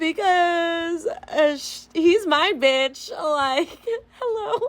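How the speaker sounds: very slow laughing talk. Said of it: "sorry, not sorry that I'm laughing".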